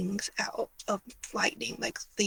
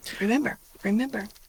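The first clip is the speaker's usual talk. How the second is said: plain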